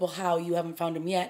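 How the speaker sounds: put-on snarky voice. Retelling a character's reply in an episode: imitating someone being snarky. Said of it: "she kinda gets a little snarky with him".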